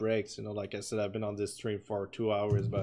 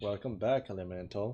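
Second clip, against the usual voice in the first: plain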